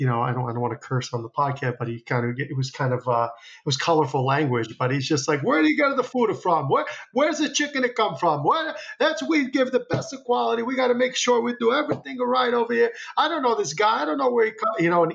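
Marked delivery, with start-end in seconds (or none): 5.4-15.1 put-on Italian accent in a much higher voice. Retelling what the man selling him chicken said, imitating his Italian accent. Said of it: "in his Italian accent".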